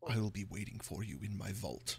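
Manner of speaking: very hushed, very soft, sinister evil villain voice. Voicing a villain speaking from afar: evil Strahd voice. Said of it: "That was a great evil laugh".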